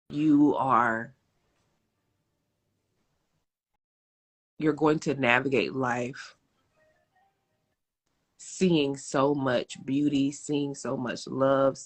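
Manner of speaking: voice holding back emotion. Speaking to the audience, trying not to get emotional. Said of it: "I'm trying not to get emotional".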